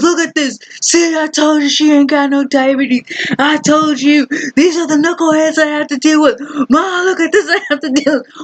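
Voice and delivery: high-pitched, fatherly, lecturing voice. Retelling dad arguing about the diabetes question: imitating dad. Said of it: "He goes".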